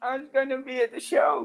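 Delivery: very high, put-on old prospector-style old man voice. Plugging the Friday Late Show with a co-host, in an old prospector voice. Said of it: "What was that voice?".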